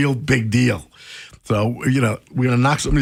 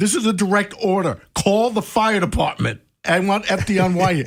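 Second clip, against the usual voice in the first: put-on furious, high-pitched, barked yelling; 8 semitones higher than usual. Retelling ordering him to call the fire department after he refused; retelling an angry yell. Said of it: "I'm yelling at him now".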